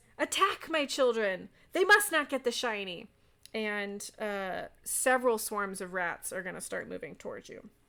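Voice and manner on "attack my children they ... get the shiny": loud, high screeching rat-creature voice. Game master voices a greedy creature as the players enter, screeching. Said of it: "he screeches".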